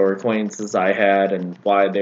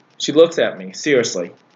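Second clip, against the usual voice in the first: plain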